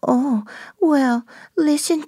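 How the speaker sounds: put-on high baby voice. Demonstrating the voice a woman uses while analyzing it: high-pitched baby voice. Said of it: "that's very high-pitched".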